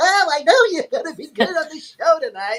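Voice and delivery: squeaky, very high cartoon rabbit voice. Imitating how a friend talks in character, Roger Rabbit voice. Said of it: "he is Roger Rabbit when he's doing it".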